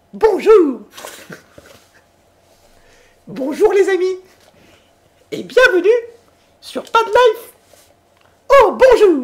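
swooping, high-pitched cartoon mouse voice. Asked by the other speaker to do the voice, greeting listeners, in a Mickey voice. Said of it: "tu fais la voix de Mickey".

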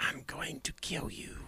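slow, soft, creepy whisper. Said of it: "The one that whispers at you, like".

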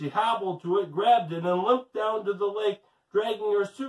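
ordinary delivery, nothing marked

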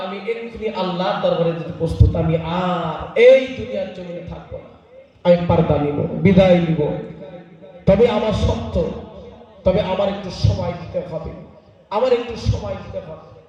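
low, solemn voice.

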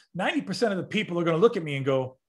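ordinary talk

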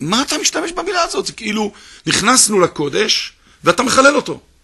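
loud, high, angry shouting outburst. Retelling how a professor reacted to the word he used, retelling an angry shout. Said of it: "והוא מתחיל לצעוק".

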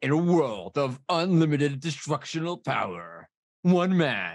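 put-on slow, old-school movie trailer announcer voiceover. Imitating an old movie trailer voiceover: deep movie trailer voice. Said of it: "They don't do movie trailers like that anymore".

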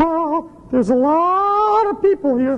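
very high monkey puppet voice, words stretched out. The monkey puppet George reacts to the crowd, in George monkey puppet voice. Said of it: "He's a monkey puppet".

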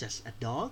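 "dog" lifted with rising intonation. English lesson in thai, turning a phrase into a question: rising pitch on dog. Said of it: "ลากเสียงขึ้นไปเพื่อใช้ให้เป็นประโยคคำถาม ... เราจะเน้นเสียงสูงขึ้นตอนสุดท้าย".

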